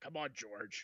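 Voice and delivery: put-on gruff voice. Imitating an actor who always urges george on: gruff voice. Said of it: "he has that gruff voice".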